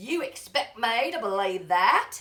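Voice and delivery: put-on London Cockney accent. Speaker demonstrates the accents they can do, Cockney accent. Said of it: "I might sound a little bit more Cockney like this".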